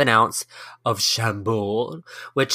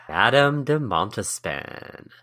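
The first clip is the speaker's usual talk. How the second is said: sultry, seductive delivery with sexy flair. Podcast co-host names today's historical subject, putting some sexy in it. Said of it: "Like you put some some sexy in it".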